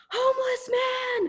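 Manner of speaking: high-pitched, frightened, terrified screaming yell. Retelling what a man yelled while running back through the dark, retelling a yell. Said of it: "And he yelled".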